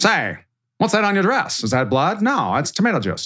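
1930s-style voice. Acting out a 1930s exchange about a stained dress: 1930s-style voice. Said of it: "They all talk like this".

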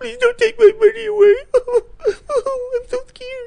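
put-on very high, whiny, blubbering baby-like sobbing. Mad at a supposedly conservative guy, act out his pleading, mock-sobbing like a poor baby. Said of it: "crawls to his knees sobbing like a poor baby".

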